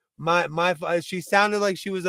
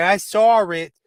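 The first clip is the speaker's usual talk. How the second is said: loud put-on East Coast accent, "saw" said East Coast way; 6 dB louder than usual. Teasing the other speaker by copying how they say it: imitating an East Coast accent. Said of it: "the most East Coast thing about it".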